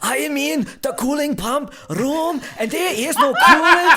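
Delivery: very high, shrill, loud German voice. Retelling what a german coworker says on calls: imitating a german coworker. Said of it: "he'll be like".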